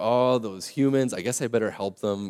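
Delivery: plain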